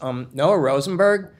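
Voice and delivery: tentative, hesitant, unsure, not-quite-sure reply. Retelling a kid telling a police officer his name: imitating an unsure answer. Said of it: "like he's not sure".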